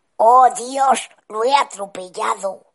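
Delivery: hoarse, high-pitched exclaiming voice. Narrator reads the father's line as the car brakes suddenly, a hoarse exclamation. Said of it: "exclamar con voz ronca".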